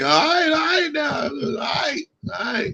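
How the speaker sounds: very high-pitched, annoyed and upset tone. Retelling how a father sounds when first getting upset: imitating father's upset voice. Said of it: "when he get upset".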